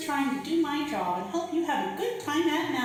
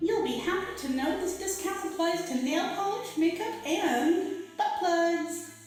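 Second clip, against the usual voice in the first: cartoon shopping assistant voice; 3 semitones higher than usual. Voicing a hovering blue cartoon shopping assistant announcing a sale: cartoon shopping assistant voice. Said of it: "Great delivery of that line".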